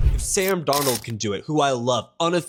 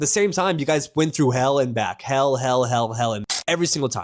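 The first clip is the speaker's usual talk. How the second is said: ordinary talk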